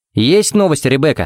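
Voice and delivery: ordinary delivery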